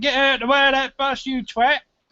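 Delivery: put-on child voice, high, urgent, shouting. Acting out a hypothetical son warning someone about a bus: imitating a boy shouting. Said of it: "And he shouts out".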